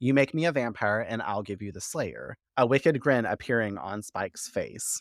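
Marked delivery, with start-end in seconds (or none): none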